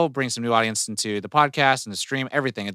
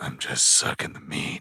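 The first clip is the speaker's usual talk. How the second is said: whispered right into the microphone; 10 semitones lower, 7 dB quieter than usual. Repeating a line at another speaker's request: whispered into the microphone. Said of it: "say that again, but whisper it into the microphone?".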